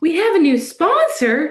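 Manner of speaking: high, loud, mock-surprised, excited tone.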